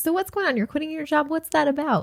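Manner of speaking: inquisitive, non-judgmental tone. Demonstrating how a question sounded the first way it was phrased: curious tone. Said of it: "It was like a curious".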